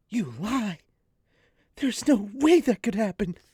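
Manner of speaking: high, loud, projected theatrical stage whisper. Reading a character's outburst from a story aloud: stage whispering. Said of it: "Stage whispering".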